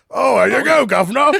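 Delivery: bad, hammy Cockney accent. Acting out a now-dead man who knew his accent sucked and hammed it up, bad Cockney accent. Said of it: "his Cockney accent is so brilliant".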